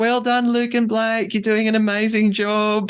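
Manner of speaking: screaming at full stretch, very high. Retelling how a teammate cheered on two rowers: imitating Annabelle screaming. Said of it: "just screams to them".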